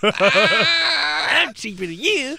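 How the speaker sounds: play-acted very high, drawn-out braggadocious tone. Retelling how another speaker bragged in the cheap out game: imitating a bragging voice. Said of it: "your braggadocious voice".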